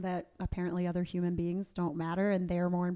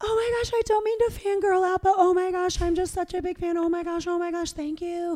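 put-on teary gushing, much higher and louder; 12 semitones higher, 8 dB louder than usual. Retelling how Corbin reacted to congratulations, imitating Corbin's teary gushing. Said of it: "almost about to cry".

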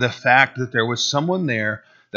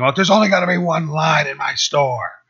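mock booming yell, male voice, higher; 4 semitones higher than usual. Retelling how a burly man behind a counter yelled at a customer: retelling a booming yell. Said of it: "who's got a booming voice yelling".

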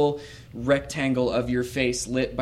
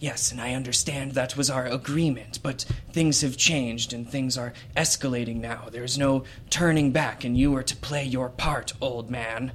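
put-on aged, weathered-sounding, wizened old voice. Narrator describes an overheard conversation, voicing one speaker: old wizened voice. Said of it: "You hear the old wizened voice say".

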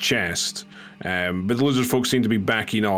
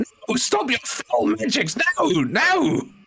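very high, slow, shrill, drawn-out shriek. Voicing a character reacting to a spoken incantation, screaming. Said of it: "he kind of screams".

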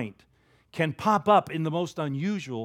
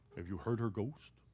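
hushed, scary ghost-story storyteller voice; 7 semitones lower, 15 dB quieter than usual. Retelling how a blind man asked them about a ghost, in a scary voice. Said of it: "he used a real scary voice".

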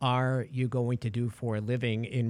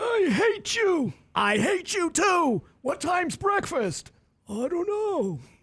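put-on shrill, very high, grumpy, crabby old man voice; 4 dB louder than usual. Describing people walking out into the hall, speaking as them in an old grandpa voice. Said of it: "Why does it sound like Grandpa Rosso?".

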